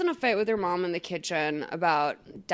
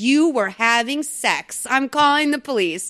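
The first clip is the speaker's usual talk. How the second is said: accusing rant, drawn out. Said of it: "And she's like".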